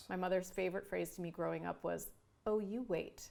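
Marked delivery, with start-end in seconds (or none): 2.5-3.3 put-on funny, playful way of saying it. Retelling a mother's favorite phrase: imitating mother's funny way of saying it. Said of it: "she would say it in a funny way".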